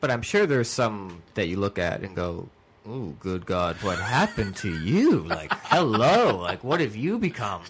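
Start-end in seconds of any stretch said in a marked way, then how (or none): 2.9-7.6 put-on creepy voice. Acting out someone's reaction at a class reunion: imitating a creepy voice. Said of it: "that was the creepy way of".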